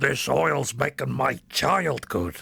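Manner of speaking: very slow, rough, creaky, rasping drawl, badly done. Recalling the film Lorenzo's Oil, doing a Nick Nolte impression. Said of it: "Is that a good impression?".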